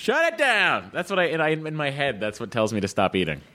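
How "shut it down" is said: mock yell, high-pitched. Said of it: "I just hear him saying".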